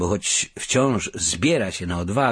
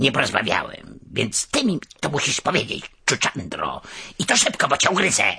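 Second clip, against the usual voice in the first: pushy, impatient, rushed tone; 5 semitones higher than usual. Narrator voicing a character threatening Czuczandra, impatient threat. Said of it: "impatient threat to the muskrat".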